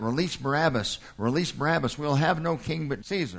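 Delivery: ordinary delivery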